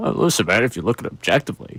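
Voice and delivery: imitated radio co-host voice. Showing the co-host a fake voice of Bill: imitating Bill's diction and inflection. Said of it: "that doesn't sound like Bill, but it has Bill's, uh, diction and inflection".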